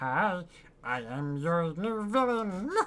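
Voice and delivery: weird, funny, put-on cartoon voice. Joking that he could be a supervillain too, in weird Stitch-like voice. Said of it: "I could put on a weird voice too, make it sound a bit like like Stitch".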